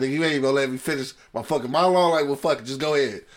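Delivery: bursting out angrily. Retelling how Shannon Sharpe was cut off: imitating angry Shannon Sharpe. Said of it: "Shannon got pissed off".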